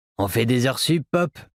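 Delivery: rough raspy voice. Reading a waitress's reply to the sheriff: raspy voice. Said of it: "lui a-t-elle répondu de sa voix rocailleuse".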